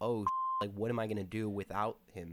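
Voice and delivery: ordinary talk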